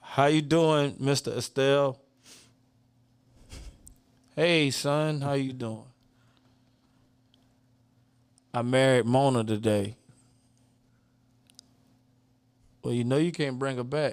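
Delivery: awkward, pause-filled delivery. Reenacting a short conversation from the story, with awkward pauses. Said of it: "the most weird, awkward pauses through the whole thing".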